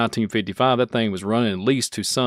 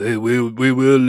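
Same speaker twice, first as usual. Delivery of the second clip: put-on robotic voice, louder; 5 dB louder than usual. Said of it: "like I always do the Terminator".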